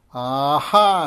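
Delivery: very loud, long, drawn-out screeching witch howl. Narrator reading the witch bursting in on the children, screeching howl. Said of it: "Screeched the witch in a long, drawn-out howl".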